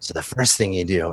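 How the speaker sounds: whispering in character voice. Voicing a character telling a player how to disarm traps: whispering in character. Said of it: "he starts to whisper in your ear".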